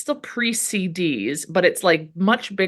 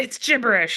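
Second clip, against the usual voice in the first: mock angry, hot-tempered, short-tempered tone; 4 semitones higher than usual. Retelling a scene where he opens the file: imitating someone angry. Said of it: "and he's all mad".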